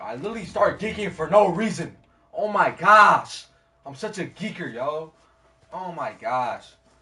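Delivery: very loud shouting. Talking alone with nobody watching, yelling to oneself. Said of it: "I'm yelling to myself".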